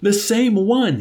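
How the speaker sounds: very high, trembling, quivering with excitement. Echoing another man's shout, the speaker cannot control himself: quivering with excitement. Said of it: "quivering with a deep and ominous excitement".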